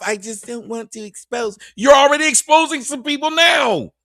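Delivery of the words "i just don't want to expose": voice gone all soft, hushed and mocking. Mocking how someone's voice gets soft when dodging a question: imitating a soft voice. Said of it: "and that voice gets all soft".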